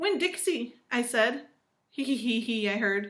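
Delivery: plain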